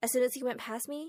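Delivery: plain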